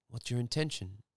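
normal talking voice

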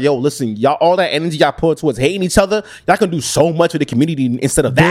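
ordinary delivery

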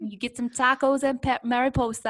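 put-on Brooklyn accent. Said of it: "I'm talking in a Brooklyn accent".

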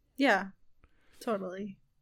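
very sarcastic-sounding tone. Agreeing to a plan for promotional videos, sounding sarcastic. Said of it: "I sound super sarcastic".

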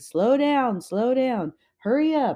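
reenacted yell. A mother retells yelling to the walkers ahead and behind, retelling own yelling. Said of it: "I was yelling".

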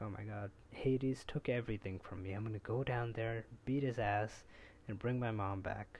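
ordinary talk, nothing marked

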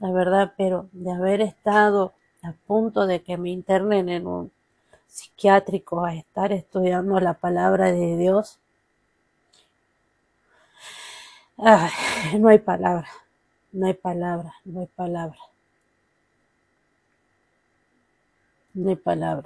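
tearful voice, crying while speaking. Opening a Bible study after a prayer, apologizing for tears, crying. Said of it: "Perdón que llore".

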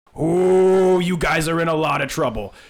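very loud booming voice, long drawn-out oh. Telling a story, a voice echoes out over the whole stadium; loud booming voice. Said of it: "this loud booming voice echo out over the entire stadium".

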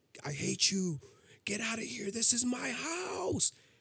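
very high-pitched screeching demonic yell. Retelling a dream where a woman confronts the speaker, her voice over a demon's. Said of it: "her voice on top of a demon voice".

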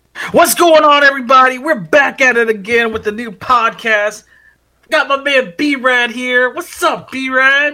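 hyped-up, excited, very high-pitched. Podcast host opening the show and greeting the co-host, excited. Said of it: "calm down".

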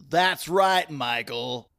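loud, on-air radio announcer delivery. Closing out the podcast's contact details, answering a co-host in a radio voice. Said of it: "That's my radio voice".

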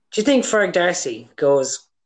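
ordinary talk, nothing marked

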